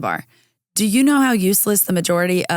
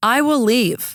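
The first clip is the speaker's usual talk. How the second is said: slightly aggressive, combative, pitched-up voice; 5 semitones higher than usual. Retelling her reply to a new general manager, re-enacting a slightly aggressive tone. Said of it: "you sound a little bit aggressive".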